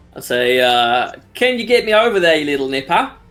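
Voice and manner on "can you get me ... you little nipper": put-on Australian accent. Getting into character in a tabletop game: stereotypical Australian accent. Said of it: "get into the accent".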